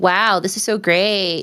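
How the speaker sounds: put-on sarcastic enthusiasm. Voicing a player's reaction during a match, imitating a sarcastic remark. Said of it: "I think sarcastically".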